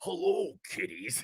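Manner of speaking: soft, breathy, hushed, creepy horror villain whisper. Dressed as Freddy Krueger, the speaker retells greeting people: Freddy Krueger voice. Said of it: "I always like talk like this".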